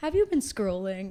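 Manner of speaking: gentle, calm, reassuring, soothing woman's voice. Speaker describing a TikTok prompt that sends her to bed, imitating a calming woman. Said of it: "this very calming woman who just looks at you and goes".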